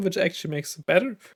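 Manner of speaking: breaking, cracked voice mid-phrase. Speaker comparing weapon stats when the voice cracks mid-sentence. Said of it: "voice crack".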